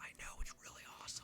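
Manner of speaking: soft, breathy, secretive whisper. Retelling telling a secret idea to Heather: retelling a whisper. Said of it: "Why are you whispering?".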